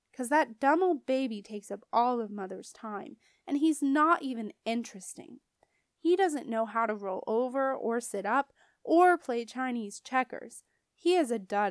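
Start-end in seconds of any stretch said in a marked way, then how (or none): none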